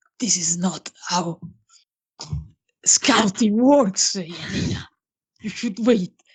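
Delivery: hushed, mildly cross scolding whisper under the breath. In the game, speaking back toward Yanina: whispered. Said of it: "whisper back to towards the general direction".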